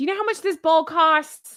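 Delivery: loud, high, fast yelling. Reacting to the price of a bowl a viewer found, yelling. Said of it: "I'm yelling".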